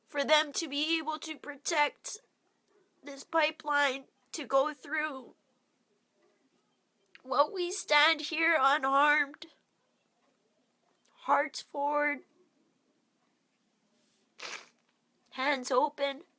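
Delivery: crying while speaking. Describing the buffalo arriving and the opposition faced: crying while speaking. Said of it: "And I'm crying now because it hurts".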